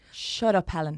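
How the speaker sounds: breathy Dublin accent. Demonstrating the phrase for someone practising the accent, in a breathy dublin accent. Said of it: "just add a bit of breath".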